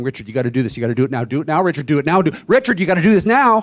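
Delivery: very loud, rushed, relentless yelling with rising urgency. A speaker acts out the voice his disease uses on him, imitating an urgent inner voice. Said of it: "my will is a constant urgency".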